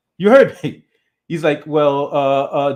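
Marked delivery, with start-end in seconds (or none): 1.7-2.7 put-on stammering, much slower. Retelling a man's answer to a blunt question, imitating someone stammering. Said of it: "dude starts studying and stammering".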